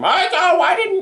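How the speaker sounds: very high, really shrill voice. Podcaster imagining his mom's reaction after watching this, shrill voice imitating Mom. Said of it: "I initially gave Mom a really shrill voice".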